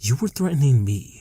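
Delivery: condescending, high-pitched voice. Reading a story aloud, the narrator addressing a captive: as if to a small child. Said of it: "as if speaking to a small child".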